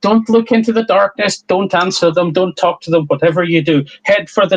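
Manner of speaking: insistent, urgent, called-out voice. Voicing the professor yelling back while running across a bridge: yelling a warning. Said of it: "she yells back".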